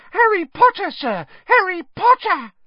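very high, loud squealing cry. Reading a story: something small hurtles across the room toward him, squealing.

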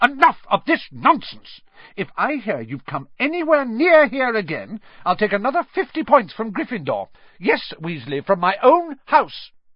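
furious, storming, angry outburst, loud and high. A woman scolds a student and threatens to take house points, storming angrily. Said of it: "she stormed".

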